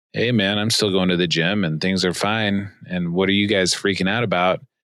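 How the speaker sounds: ordinary talk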